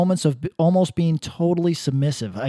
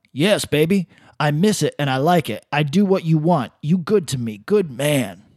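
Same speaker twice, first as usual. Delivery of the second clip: mock, put-on encouraging dad voice; 2 semitones lower than usual. Retelling a woman's reply to him, in a put-on encouraging dad voice. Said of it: "You sounded like an encouraging dad".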